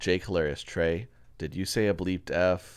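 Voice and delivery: ordinary talk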